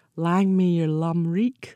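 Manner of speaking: Scottish brogue. Asked by the host for Scottish best wishes to a traveller, best Scottish brogue. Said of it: "in your best Scottish brogue".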